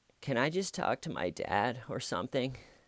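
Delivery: quiet, sad, defeated and worn-down voice. Retelling someone's reply after long pressure, imitating a sad, beaten voice. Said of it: "in a sad, beaten voice".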